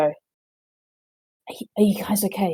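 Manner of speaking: hushed, soft, stumbling half-whisper. Playing a character checking on three companions near a trapped cage: half-whispering in character. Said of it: "she would just sort of whisper to the three of them and go".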